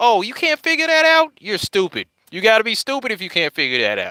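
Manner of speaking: high, swooping angry shout. Imitating viewers of the show Catfish: imitating people screaming at the TV. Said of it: "they'll be screaming at the T V like".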